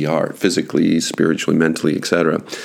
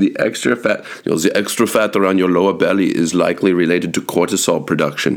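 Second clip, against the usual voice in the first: bad, not-very-good put-on Austrian accent. Retelling what he said to them, in a bad Austrian accent. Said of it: "that's probably not a very good Austrian accent".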